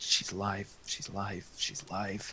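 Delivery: whispered, repeated mumble under the breath. Game player voicing his character, who looks around and mutters under his breath. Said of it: "just kind of mutters under his breath".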